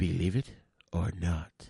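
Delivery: very low, deep, breathy, hushed voice with pauses. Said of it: "He would go".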